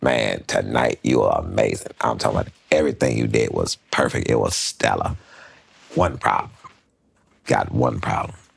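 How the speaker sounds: rough, creaky, roughened put-on voice. Retelling what a comic said after sets, doing Rodney's voice. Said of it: "this was Rodney".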